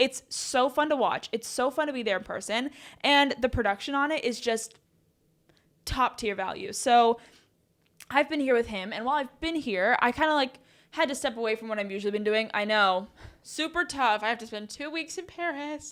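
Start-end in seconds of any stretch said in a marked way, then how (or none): 12.5-15.9 tongue-in-cheek, sarcastic poor-me lament. Joking about having to spend two weeks in paris: sarcastic tone. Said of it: "that was sarcastic".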